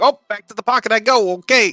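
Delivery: very high, squeaky creature voice. Voicing Ratscat being sent back to the pocket dimension: Ratscat character voice. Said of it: "It's like".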